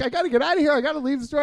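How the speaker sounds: panicked, freaking out, high-pitched, rushed scramble of words. Recounting a crisis in a store, the speaker retells panicking. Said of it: "I'm panicking".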